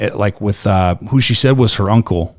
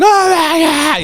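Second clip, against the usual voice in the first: panicked meltdown cry, pitched very high. Retelling how she reacted when he appeared: imitating someone freaking out. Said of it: "she starts fucking going into meltdown".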